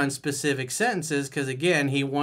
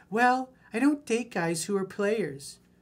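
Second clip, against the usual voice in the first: high, girly put-on girl voice; 7 semitones higher than usual. Quoting a woman's line from a book in a put-on girl voice. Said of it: "let me do my girl voice".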